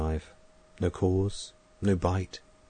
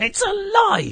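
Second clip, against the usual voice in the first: loud, very high, piercing screech; 6 dB louder than usual. At a funeral, an old woman fights her way to the grave, screeching. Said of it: "she screeched".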